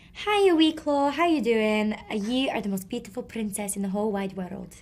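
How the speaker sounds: put-on Scottish accent. Quoting what he says to her in voice notes, imitating a Scottish accent. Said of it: "Can you guys do the Scottish accent?".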